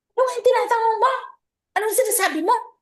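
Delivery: very high-pitched, angry voice. Describing someone snapping back at a soft-spoken question, act out a mock-angry reply. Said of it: "nagalit ka".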